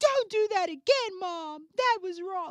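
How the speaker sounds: put-on child yelling. Acting out a small child scolding his mother, imitating a child yelling. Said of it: "He yelled at his mother".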